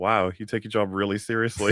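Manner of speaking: ordinary talk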